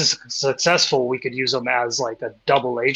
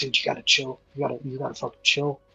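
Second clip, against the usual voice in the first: whispering, quieter and faster; 5 dB quieter than usual. A player's character speaks aside to Opal: whispering. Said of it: "And I whisper to Opal".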